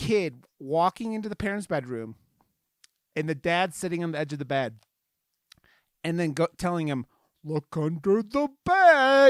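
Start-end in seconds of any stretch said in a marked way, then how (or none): 7.4-9.3 very high, loud, very slow, warped distortion. Quoting the dad in a scene where the audio is distorted: distorted voice. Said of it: "I'm saying it like that because that's all all the fucking audio is distorted".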